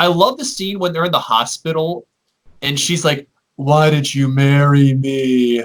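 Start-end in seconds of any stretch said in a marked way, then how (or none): 3.6-5.6 mock deadpan monotone, very slowly drawn out. Recalling a favorite hospital scene, speaker quotes her line: flat monotonous voice. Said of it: "that flat, monotonous voice".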